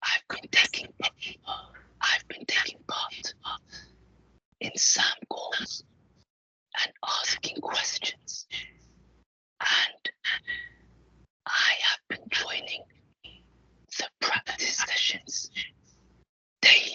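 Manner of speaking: whispered speech. Asked to whisper a while, the speaker reports on their week, whispering. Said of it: "Let's whisper a while".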